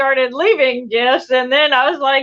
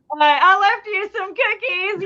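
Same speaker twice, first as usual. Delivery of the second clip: mock pitched-up yell, calling out; 7 semitones higher than usual. Recounting leaving cookies in the woods and calling out, retelling a yell. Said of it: "I yelled out".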